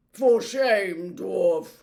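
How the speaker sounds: thick-voiced. An unseen speaker answers the angry dwarf in a thick voice. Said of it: "came a thick voice".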